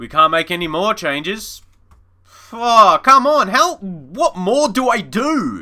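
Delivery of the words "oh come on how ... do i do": frustrated anger, very drawn out and pitched up. Watching a match slip away, getting angry. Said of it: "Sorry if I'm getting angry".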